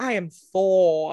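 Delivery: put-on English accent, English-sounding screen superhero voice. Mocking an actor's accent in his hero role: imitating Chris Hemsworth as Thor. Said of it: "the way he's like".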